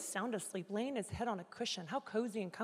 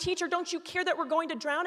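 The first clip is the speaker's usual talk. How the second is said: desperate, terrified, panicked cry, pitched up; 8 semitones higher, 8 dB louder than usual. Reading a Bible passage aloud, retelling the disciples' cry: retelling the disciples' panicked cry. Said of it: "And I'm saying it like this because that was me".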